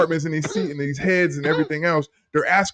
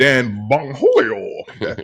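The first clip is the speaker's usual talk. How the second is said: put-on cartoon teenager voice; 4 semitones lower than usual. Saying the assistant FBI director's name: Butthead voice. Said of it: "this is my best impression of, uh, Butthead".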